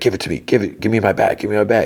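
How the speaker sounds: insistent, forceful, repeated. Retelling a scene where he grabs for his bag: imitating a demanding voice. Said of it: "he demands".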